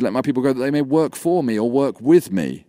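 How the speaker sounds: ordinary talk, nothing marked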